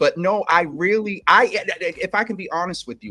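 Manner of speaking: tripping over words excitedly. Speaking honestly in a conversation, excited and stuttering. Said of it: "and I'm stuttering, and so that means that I'm I'm excited".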